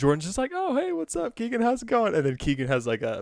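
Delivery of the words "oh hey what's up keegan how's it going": very high-pitched, breezy, super casual. Speaker retells a comedy sketch where one man greets another at a bar, mock-casual greeting. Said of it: "just like being really casual about everything".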